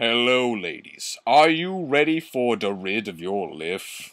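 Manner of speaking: commercial spokesman pitchman voice, like an ad read. Joking about a line to say from now on, in Old Spice voice. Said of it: "I'll say it in like Old Spice voice".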